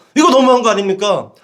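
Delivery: loud, annoyed, outraged voice.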